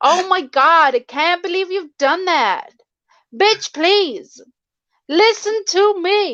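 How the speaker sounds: spoiled, very high put-on valley girl American accent. Asked if she can sound American, doing her one phrase in a put-on American accent. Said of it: "the only phrase I could do in American".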